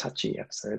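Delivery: plain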